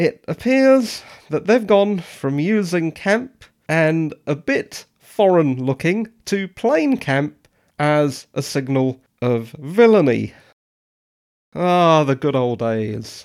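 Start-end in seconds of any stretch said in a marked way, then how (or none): 11.5-13.3 sarcastic, lower pitch. Reviewing how a show portrays its villains, sarcastic. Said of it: "that was sarcasm".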